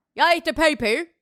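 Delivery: bad, fake Australian accent. Saying the line in an accent the other person calls out: bad australian accent.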